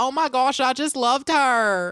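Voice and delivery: put-on American Southern accent on the whole line. Describing how they picked up talking this way on a trip, imitating a southern accent. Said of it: "Talking in that like Southern accent".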